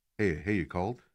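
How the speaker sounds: low, hushed half-whisper under the breath. Retelling what a man said when he called back, half-whispering. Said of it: "why are you whispering?".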